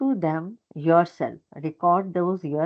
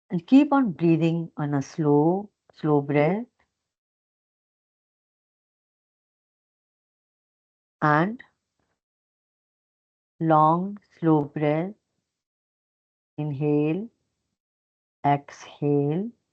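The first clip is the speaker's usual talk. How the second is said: slow, unhurried, drawn-out delivery. Guiding listeners through slow breathing with eyes closed: slow pace. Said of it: "My pace will be slow".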